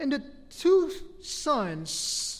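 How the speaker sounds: two drawn out, slow and pointed. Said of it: "you see the problem there?".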